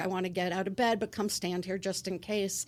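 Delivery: normal talking voice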